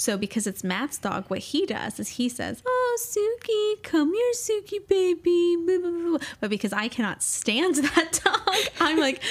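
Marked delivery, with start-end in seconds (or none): 2.6-6.2 mock sugary voice, very high, slow, drawn out. Retelling how the dog's owner Matt calls his dog inside: imitating Matt's sweet dog-talk. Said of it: "a really sweet voice".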